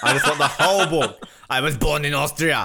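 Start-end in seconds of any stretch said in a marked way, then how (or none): 1.5-2.7 put-on Austrian accent. Imitating how he wants the book read, in Arnold's Austrian accent. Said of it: "read this book to me in Arnold's accent".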